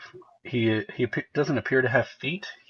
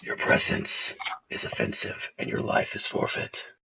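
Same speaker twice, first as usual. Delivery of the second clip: hushed, whispered dark superhero voice; 11 semitones lower, 3 dB quieter than usual.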